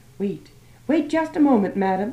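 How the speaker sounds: shrill, excited outburst. Narrator reads the florist calling after a woman leaving, shrill and excited voice. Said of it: "said in a shrill, excited voice".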